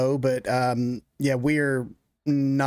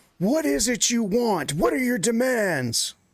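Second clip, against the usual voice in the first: loudest, booming full-voice shout, pitched up; 9 semitones higher than usual. A character yells out to the woman in the red dress: loudest, most booming yell. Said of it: "in her loudest, most booming voice".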